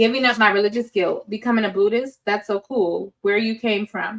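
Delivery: ordinary delivery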